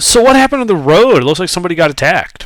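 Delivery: high, fast, rather loud voice. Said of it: "rather loudly ask".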